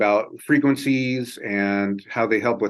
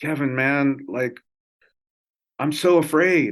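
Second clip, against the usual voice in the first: put-on crying, mock-tearful, higher and slower; 3 semitones higher than usual. Retelling what a friend said on his deathbed: imitating a friend crying. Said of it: "his friend was like crying".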